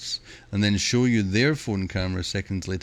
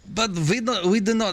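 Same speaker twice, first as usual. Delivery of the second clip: slipping into a German accent, voice way up; 12 semitones higher than usual. Speaking for the French, then noticing the accent slipped; accidentally German-sounding accent. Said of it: "Why am I sounding German?".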